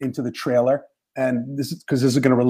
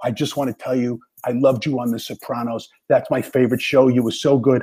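mock whispering. Retelling what the sound guy said while wiring him up: imitating someone whispering. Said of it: "and he whispers".

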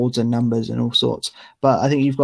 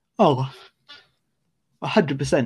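talking through a small yawn; 2 semitones higher than usual. Agreeing with the other speaker, yawning. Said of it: "Sorry, I had a small yawn".

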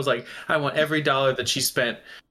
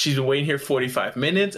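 ordinary talk, nothing marked

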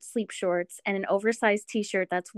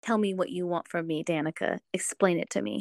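put-on intense, slow delivery; 3 semitones lower, 3 dB quieter than usual. Quoting a book character's line to a co-reader: imitating an intense, slow delivery. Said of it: "I just love his intensity when he".

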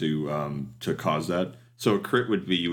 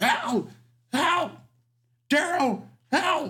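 shrill, very high, drawn-out, panicked screams. Voicing a captured creature calling out in an alleyway; screaming bloody murder. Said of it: "he starts screaming bloody murder".

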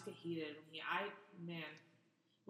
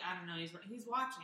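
plain

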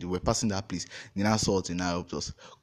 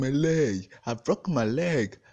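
put-on very slow, high, drawn-out acted child's shout; 6 semitones higher, 3 dB louder than usual. Retelling a bus swerving, a child in the bus: imitating a child shouting. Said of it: "One child in the bus was shouting".

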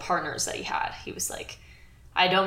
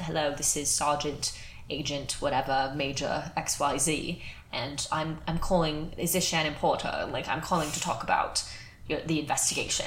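very formal British accent, badly put on; 3 semitones lower, 6 dB quieter than usual. Retelling a very formal caller's phone call: put-on British accent. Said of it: "he's talking in his British accent".

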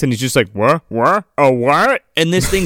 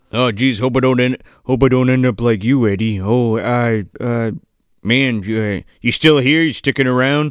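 deep, rambling character voice; 4 semitones lower than usual. Retelling a scene where the character keeps talking to a corpse: imitating Dan Haggerty. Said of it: "He's like".

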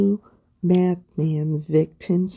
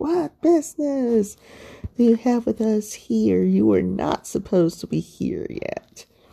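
acted, restrained, mild demonic cry of a madman; 3 semitones higher than usual. Retelling how the madman met Jesus: imitating a madman screaming. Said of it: "the madman just screamed out".

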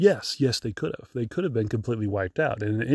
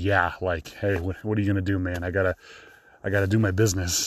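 put-on exasperated man's voice, lower; 4 semitones lower than usual. Retelling what a man using a stall without a door said: imitating an exasperated man. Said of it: "he had an exasperated".

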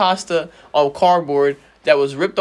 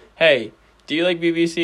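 normal talking voice

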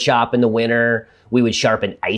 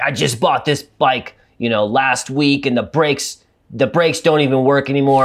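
put-on pissed-off, fed-up, angry griping; 3 semitones higher than usual. Retelling a dad coming in with his new bike, imitating a pissed-off dad. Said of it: "he's all pissed off".

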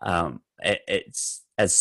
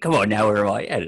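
gruff giant character voice; 2 semitones higher than usual. Showing the voices you do reading Harry Potter to your youngest, Hagrid voice. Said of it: "I got Hagrid".

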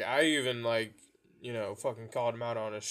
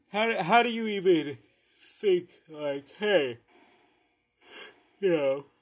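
yawning while talking, much higher and louder; 7 semitones higher, 7 dB louder than usual. Talking to viewers about people who dressed up as the speaker, speaking through a yawn. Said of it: "Sorry, yawning".

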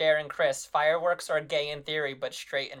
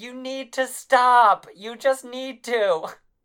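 slow, shrill, drawn-out, screeching yell; 8 semitones higher, 8 dB louder than usual. Retelling a woman asked to yell at the neighbors: Shailene Woodley screech voice. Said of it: "in her Shailene Woodley screech voice".

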